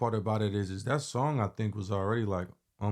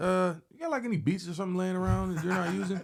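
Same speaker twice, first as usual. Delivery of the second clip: put-on nonchalant voice, higher pitch; 10 semitones higher than usual. Retelling a phone call from Tech: nonchalant Tech impression. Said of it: "the most nonchalant conversation ever".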